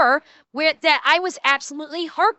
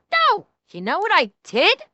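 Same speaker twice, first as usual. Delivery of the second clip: normal talking voice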